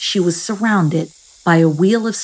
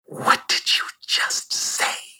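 breathy, hushed, whispered hissing snake voice. Reading a story aloud, the lead snake questions Juanita, hissing. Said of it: "She hissed".

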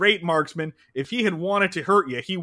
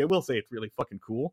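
plain

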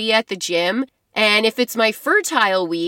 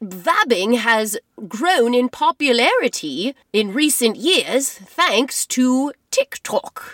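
explainer delivery of a science-show presenter. Resuming after the other speaker's interruption, back in the science voice. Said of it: "I'm getting back to the science voice here".

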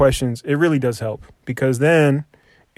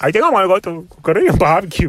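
mocking put-on speech, higher pitch; 5 semitones higher than usual. Teasing another speaker by mimicking how they just talked: mocking imitation of friend's speech. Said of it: "why do you talk like that?".

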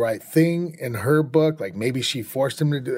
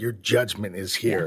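put-on angry, disgusted, furious tone, lower; 3 semitones lower than usual. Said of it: "That type of voice".

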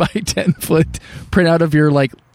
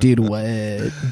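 put-on stoned voice, much lower and quieter; 5 semitones lower, 4 dB quieter than usual. Retelling how he reacted from the back seat, imitating a stoned voice. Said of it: "sounds like he's just, like, had way too much Indica".

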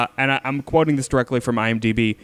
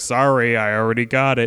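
put-on nerdy voice. Telling how Spielberg answered, in a Spielberg impression. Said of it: "That's my impression of Spielberg".

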